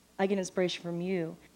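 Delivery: normal talking voice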